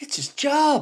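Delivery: put-on botched Cork accent. Quoting what Roy Keane likes to say after praising Alisson's save, bad Roy Keane impression, unplaceable accent. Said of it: "I don't know what fucking accent that was".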